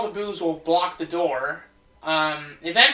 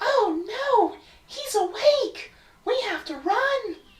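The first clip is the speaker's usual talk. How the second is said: very high, airy, wispy ghostly voice. Narrating a chase scene and voicing a ghost character, in a wispy ghost voice. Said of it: "a wispy kind of voice makes sense because she's a ghost".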